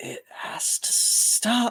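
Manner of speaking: soft, hushed, barely voiced whisper. She stops for just a second, looks into the person calming her, and speaks, whispering. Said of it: "she just whispers".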